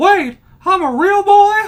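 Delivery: very high, loud, slow squealing cartoon voice. Doing a requested line in the Pinocchio voice. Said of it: "in the Pinocchio voice".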